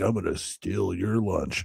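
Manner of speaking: rasping, rough, creaky demon voice. Retelling how another speaker's audio sounded, imitating a demon voice. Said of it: "Then you had this demon come in".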